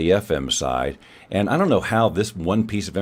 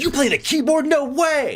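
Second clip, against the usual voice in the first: mock over-the-top, jazzed-up gush, very high, swooping. Mimicking how he jazzes up her words: mock over-excited, jazzed up. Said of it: "Now see, I'm jazzing up his jazzing".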